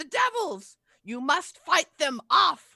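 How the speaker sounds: very high, shrill, loud urgent cry. A game master voicing a cry heard over a battlefield, Mad Maggie's urgent cry. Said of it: "you hear Mad Maggie's voice cry".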